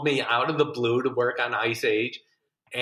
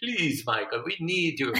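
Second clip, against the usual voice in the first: put-on Hungarian accent; 3 semitones higher, 3 dB quieter than usual. Imitating the director begging him not to quit, put-on Hungarian-sounding accent. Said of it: "he sounds like he's Hungarian".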